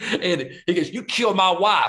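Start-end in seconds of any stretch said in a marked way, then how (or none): 0.9-1.9 high, drawled, put-on Southern accent. Imitating an actor's favorite line: imitating an actor's Southern accent. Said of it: "talk about his Southern accent, the way he did it".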